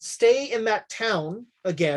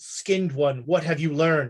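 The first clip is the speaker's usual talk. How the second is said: put-on voice, much lower; 4 semitones lower than usual. A game master voices someone speaking from behind a player on watch; voice from behind. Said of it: "you hear a voice behind you".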